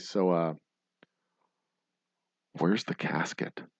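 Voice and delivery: acted whispering. Retelling leaning over to the funeral director at the burial site, retelling a whisper. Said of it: "whisper into her ear".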